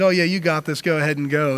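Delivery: put-on sarcastic tone. Retelling what the man of God first said to Ahab, a sarcastic remark.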